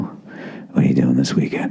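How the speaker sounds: low, creepy whispering. Reading an ad, playing the creep at work behind your cubicle, creepy coworker whisper. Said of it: "I'm like that creep at work coming up behind you".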